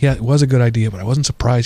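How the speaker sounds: ordinary talk, nothing marked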